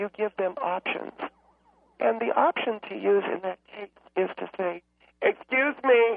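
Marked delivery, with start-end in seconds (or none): 5.2-6.2 loud, aggressive, confrontational tone. Advice on dealing with the internet generation, loud aggressive excuse-me tone. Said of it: "you're using it in a very loud and in a very aggressive way".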